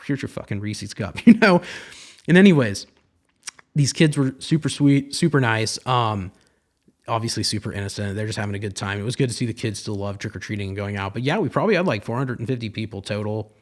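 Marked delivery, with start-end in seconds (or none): 0.0-1.2 put-on brusque businesslike tone, much quieter. Retelling handing out candy to trick-or-treaters at the door, mock all-business tone. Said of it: "I'm all business".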